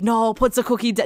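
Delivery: loud yell, broken off short. Recalling a favorite movie scene, imitating Arnold Schwarzenegger yelling. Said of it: "Arnold yelling".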